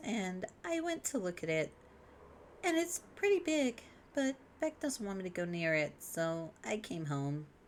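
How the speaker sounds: high, hushed, cutesy, almost uwu voice. A speaker recounts going to look at something, in a voice close to uwu voice. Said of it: "This isn't Uwu voice. ... same Venn diagram".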